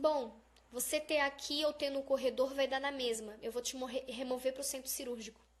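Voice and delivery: ordinary talk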